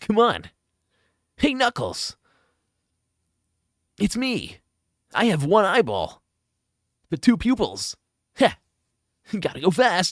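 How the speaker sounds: put-on cartoon voice, high, swooping, drawn out, sing-song. Doing voices from the adventure games, a Sonic voice. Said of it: "I can do a Sonic voice though".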